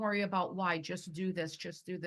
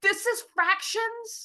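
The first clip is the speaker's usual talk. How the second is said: super angry, very high-pitched, very loud, shrill voice; 9 dB louder than usual. Retelling a student's words in an algebra class, imitating an angry student. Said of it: "one of my students got super angry".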